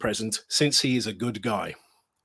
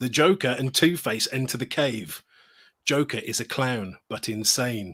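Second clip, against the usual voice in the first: ordinary talk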